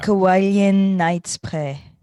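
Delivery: English words in a put-on French accent. Prompted to say a product name in a french accent: french accent. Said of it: "Spray now in the French accent".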